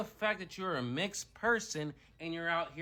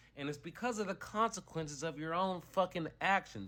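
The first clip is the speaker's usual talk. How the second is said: normal talking voice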